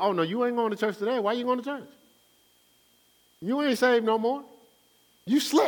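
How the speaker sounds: devil voice, pitched very high. Preaching, acting out the devil talking a believer out of church: voicing the devil. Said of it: "'Cause he going".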